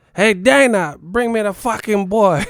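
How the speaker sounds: put-on high, loud, belted Cuban accent. Imagining Joshua coming to fight and addressing Dana, in a Yoel Romero voice with a Cuban accent. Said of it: "come to fight with a Cuban accent".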